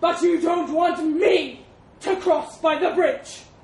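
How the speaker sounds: very loud, high, thunderous elephant boom. The elephant objects to the mouse about crossing by the bridge, thundering. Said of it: "the elephant thundered".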